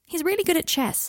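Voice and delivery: very high-pitched, defensive insistence. Speaking to someone about being friends with their father, defensive. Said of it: "he added defensively".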